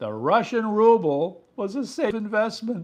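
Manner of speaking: high, loud, can't-believe-it incredulous tone. A speaker tells Eric about risk experts' investment position, sounding incredulous. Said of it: "I can't believe I'm about to say this".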